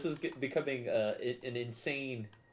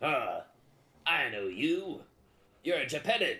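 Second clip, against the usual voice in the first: in-character bugbear creature voice; 2 semitones higher than usual. Voicing a bugbear who lost his mushroom pouch: bugbear voice. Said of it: "He looks at you and he says".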